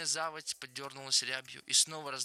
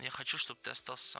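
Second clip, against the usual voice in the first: ordinary delivery, nothing marked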